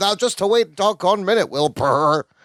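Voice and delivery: put-on talking horse voice. Retelling a sitcom scene, imitating Balky doing Mister Ed: Balky imitating Mister Ed. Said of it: "Balky does a great im-, impression as he's excited".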